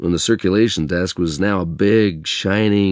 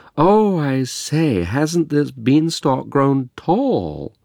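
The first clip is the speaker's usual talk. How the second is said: hammed-up, high, put-on posh accent; 7 semitones higher than usual. Mom hamming it up at story hour for the tots; posh accent. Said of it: "delivering the dialogue in a posh accent".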